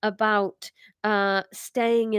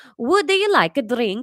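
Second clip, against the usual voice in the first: loud, best-attempt put-on Italian accent; 3 semitones higher, 6 dB louder than usual. Speaking on a stream, testing out an accent: attempted Italian accent. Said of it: "best approximation of an Italian accent".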